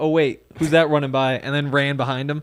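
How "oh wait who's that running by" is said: plain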